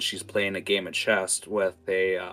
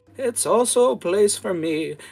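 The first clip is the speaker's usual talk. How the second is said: put-on old woman character voice, higher and louder; 13 semitones higher, 6 dB louder than usual. Voicing an old woman answering the player: old woman character voice. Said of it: "you see the old woman look at you and go".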